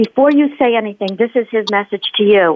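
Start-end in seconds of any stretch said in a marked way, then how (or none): none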